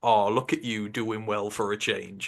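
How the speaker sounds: put-on sarcastic tone. Imitating critics who praise the team: imitating sarcastic praise. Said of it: "it's sarcastic".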